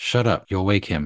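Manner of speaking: hissing voice. At the mailbox, the older boy answers his younger brother, hissed. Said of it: "The older boy hissed".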